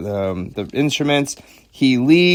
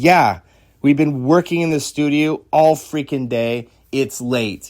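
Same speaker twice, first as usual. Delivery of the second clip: mock angry, fed-up, pissed-off tone. Retelling how Chrissy snapped back at someone: imitating an angry retort. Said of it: "Chrissy got really pissed in his face".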